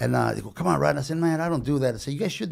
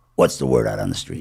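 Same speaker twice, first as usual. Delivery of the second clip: loud, tough, hard-boiled movie detective delivery; 5 dB louder than usual. Doing an impression of every cop movie: impression of a cop movie. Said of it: "This is my impression of every RoCop movie".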